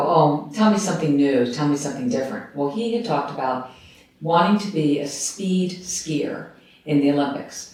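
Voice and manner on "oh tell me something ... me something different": usual speaking voice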